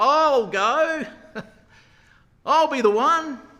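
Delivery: very loud, very high, booming bellow. Retelling Joab answering the challenge, in a big booming loud voice. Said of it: "in a big, booming, loud voice".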